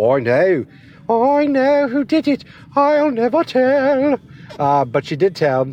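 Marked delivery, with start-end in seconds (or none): 0.0-4.2 put-on very high, slow, drawn-out Scottish accent. Imitating Nikki Cross saying she knows who did it: Nikki Cross Scottish voice. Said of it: "Or maybe it's more like this".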